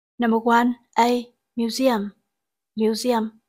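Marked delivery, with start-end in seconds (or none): 1.6-3.3 museum with stress on the second syllable, mu-SE-um. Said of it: "trọng âm rơi vào âm tiết thứ hai".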